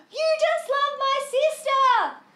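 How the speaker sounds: shrill, very high, full-volume, tearful bawling shriek. Retelling running away as a child crying after a rejection: imitating a childhood scream. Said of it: "just screamed".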